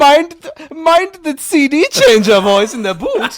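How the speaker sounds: put-on very shrill, booming, swooping, very loud German accent. Retelling a cartoon scene, quoting a german driver: imitating a german character. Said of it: "There was a German in a BMW. He's like".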